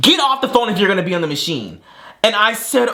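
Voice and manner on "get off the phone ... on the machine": man's light, high, mild yell. Retelling how a man waiting for the gym machine yelled: imitating a man yelling. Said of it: "he literally yells at me".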